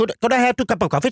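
put-on English with Indian accent. Acting out a Swedish woman ordering in English, imitating a Swedish woman's Indian-accented English.

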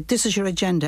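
ordinary talk

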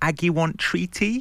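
put-on baby-talk voice of a small child. Retelling what her four-year-old sometimes says to her: imitating a baby voice. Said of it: "like, a baby voice".

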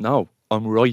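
mock certain, definitive tone. Retelling their own way of stating facts: imitating saying it definitively. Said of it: "And I say it so definitively".

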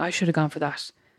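put-on laughing voice. Quoting your manager's reaction to your notice, imitating someone laughing. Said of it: "kind of laughing".

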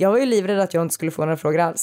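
ordinary talk

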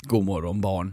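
raspy fatherly morning voice. Showing the co-host what a dad's morning voice sounds like, gravelly dad morning voice. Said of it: "lite så här skrovel".

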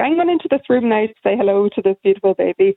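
put-on Irish Donegal accent. Retelling what a midwife from Donegal said, imitating Bridget's thick Donegal accent. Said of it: "thick Donegal accent coming up the corridor".

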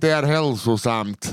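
put-on Swedish spoken with a Finnish accent. Quoting their grandmother, in a Finnish accent. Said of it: "hade de sagt med finsk brytning".

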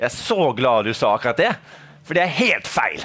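put-on accent from Bergen. Retelling an interviewee's reply, imitating a Bergen accent. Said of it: "jeg skal ta det på bergensk".

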